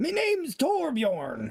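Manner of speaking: put-on gruff dwarf voice. Joking that a game character sounds like Torbjorn: Torbjorn impression. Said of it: "This is Torbjorn if he was an actor".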